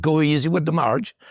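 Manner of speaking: put-on Irish accent. Retelling a remark made to a brother, in an Irish accent. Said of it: "in an Irish accent".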